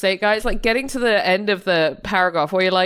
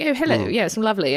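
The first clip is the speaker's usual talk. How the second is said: put-on plummy, upper-class child voice. Describing a posh child on a train: imitating a posh child. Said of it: "really posh family".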